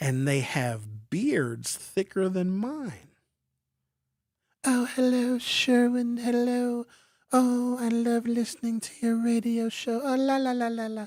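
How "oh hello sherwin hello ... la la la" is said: high, angelic caller voice. Imitating a caller who has an angelic voice on the phone: imitating an angelic female voice. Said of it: "some women that have these angelic voices".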